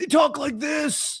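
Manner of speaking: put-on high, craggly, worn-out old-man voice. Joking that the injured Warriors players are old: craggly old voice. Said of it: "They're craggly".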